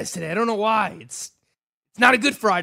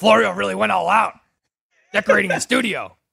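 rough, creaky, raspy voice. Doing an impression of Gabe Morency's remark after being asked: imitating Gabe Morency. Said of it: "can I get the impression?".

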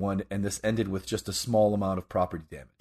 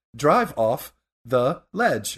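put-on navigation assistant voice, higher and louder; 5 semitones higher, 5 dB louder than usual. Joking about a drunk driver's GPS: Siri voice. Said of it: "hear the Siri voice".

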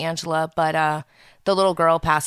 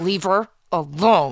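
put-on, tense speech through gritted teeth. Retelling a mother's reply on the phone at two in the morning: imitating mom talking through gritted teeth. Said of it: "she talks to me through my teeth".

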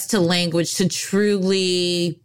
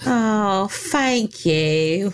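bad, unconvincing fake English accent; 2 semitones higher than usual. Thanking someone for their praise, in a bad fake English accent. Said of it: "I forgot about your English accent".

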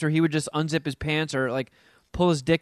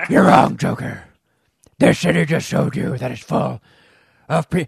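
loud, rough, throaty grumbling voice; 3 semitones lower, 6 dB louder than usual. Discussing an actor's longer Batman lines, quoting him in a throaty grumbly Batman voice. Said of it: "he really amped up that throaty, grumbly voice".

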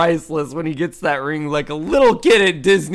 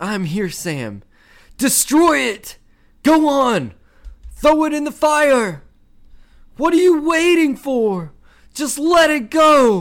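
very high, mock pleading yells; 10 semitones higher than usual. Retelling a movie scene on a mountain: imitating Frodo shouting. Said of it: "And Frodo goes".

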